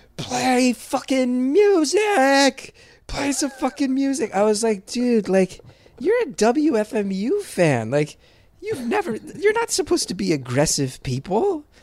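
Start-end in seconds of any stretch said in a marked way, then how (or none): 0.2-4.4 boozy heckler's holler, word music drawn out. Comedian recalls a man at the stage edge yelling during punchlines, imitating a drunken yell. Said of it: "he'd just drunkenly yell".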